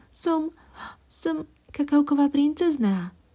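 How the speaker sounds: shy, hesitant, timid, high little voice. The cocoa princess introduces herself to the swallow, timidly. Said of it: "povedala princezná bojazlivo".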